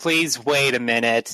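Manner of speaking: exhausted rough rude voice. A game narrator voices a character's reply in an exhausted, rough, impolite voice. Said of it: "The most exhausted sounding voice you've ever heard says".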